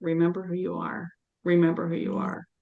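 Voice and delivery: put-on whisper. Retelling holding a four-month-old grandchild: imitating own whisper. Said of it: "I kept whispering that to him".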